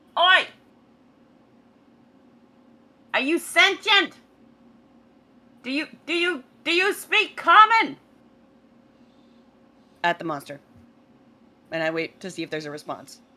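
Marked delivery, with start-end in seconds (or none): 0.1-7.9 loud call across distance, hands cupped, much higher. Playing a character in a game, calling out to a monster in the smoke, hands cupped. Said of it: "I put my hands around my mouth and I go".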